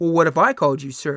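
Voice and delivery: put-on mean, masculine, intimidating voice. Retelling what another customer said to them at a store: mock mean, intimidating voice. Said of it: "In this kind of mean, masculine, intimidating voice".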